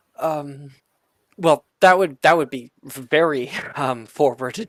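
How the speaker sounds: loud, wobbling, wavering, hesitant voice. In a roleplay, she answers a compliment in a wavering voice. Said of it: "with like a wavering voice".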